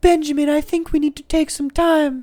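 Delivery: put-on very high voice with a slight British accent. Retelling a nineties show's plot, speaking a line in Alicia's nineties voice. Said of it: "I'm going to do her voice from the nineties".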